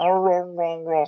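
poor put-on creature noises. Describing the classic Wookiee noises to another speaker: awful Chewbacca impression. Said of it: "That's an awful impression of Chewbacca".

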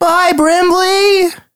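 squeaky, very high puppet character voice. Describing a goodbye scene, voicing little Arctic puppets. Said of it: "three little Arctic puppets, and they go".

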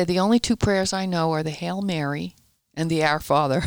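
ordinary delivery

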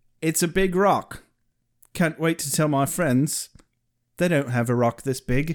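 plain

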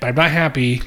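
ordinary talk

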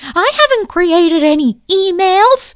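very high, very loud, shrill screeching. Retelling how Liz answered when told that they know about the emails, imitating someone screeching. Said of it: "And she screeches".

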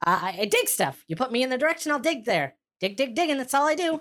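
very high little robot voice. Voicing a tiny digging automaton describing his job: tiny automaton voice. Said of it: "He says".

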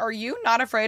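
ordinary talk

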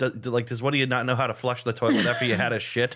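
ordinary talk

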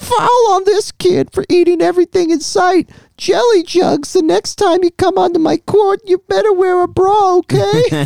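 very high, squeaky put-on character voice, pitch way up. Quoting a fat-shaming line from a film, in Whitey voice. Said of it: "I'll do the Whitey voice".

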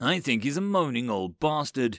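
plain

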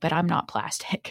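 put-on concerned child voice. Retelling how Jack answers the doctor's quote: imitating Jack, very concerned. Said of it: "very concerned".

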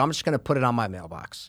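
ordinary talk

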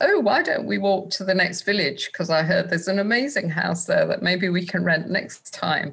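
ordinary talk

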